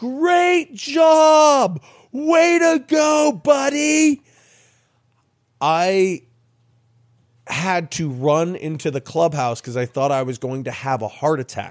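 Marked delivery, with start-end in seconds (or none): 0.0-4.2 very high, very slow scream, every syllable spelled out. Retelling a celebration in the dugout: imitating Jeff's over-enunciated scream. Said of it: "over-enunciates and screams".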